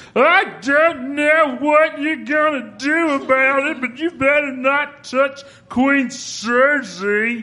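very high zombie voice, Cersei drawn out. Introducing the role they voice, the speaker demonstrates the zombie Mountain voice. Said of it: "the voice of the new zombie mountain on the Game of Thrones, which sounds like this".

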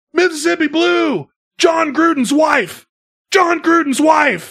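put-on screaming. Retelling a quarterback's play call on the field: imitating a quarterback screaming. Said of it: "he's screaming".

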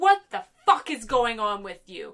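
acted-out angry, confrontational outburst. Retelling a scene where McCoy storms in: McCoy storming in angrily. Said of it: "McCoy storms in, being like".

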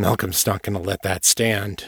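plain

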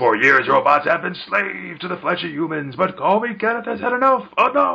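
high put-on cartoon voice, pitch pushed up. Voicing a robot from a comic the way it sounds in their head: Crushinator voice. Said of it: "I really imagine him as talking like, uh, the Crushinator on, um, Futurama".

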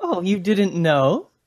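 wry drawl. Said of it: "I smile wryly and say".

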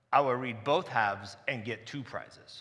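very deep, low, menacing, intimidating put-on voice. Retelling what a kindergartner said to the speaker, imitating a much lower intimidating voice. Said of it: "a voice that was much lower than".

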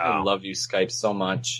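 sarcastic tone. Complaining about skype making the audio cut out: sarcastic. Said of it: "That's sarcastic".

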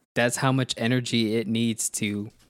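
ordinary talk, nothing marked

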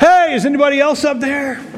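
high, loud, desperate call upward.

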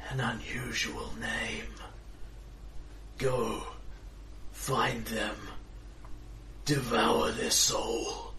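very rattling, slow, hushed voice. A figure on a throne shrouded in darkness gives an order, very rattling voice. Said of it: "speaking in a very rattling voice".

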